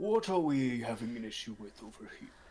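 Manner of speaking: gruff, rough-edged but gentle, kindly creature voice. Voicing a Loxodon character in the story: generic Loxodon voice. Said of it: "generic Loxodon voice".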